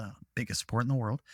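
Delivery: fast, hushed, half-whispered aside. Speaker in conversation adds an aside they fear may upset someone, half-whispered. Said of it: "I have to whisper that".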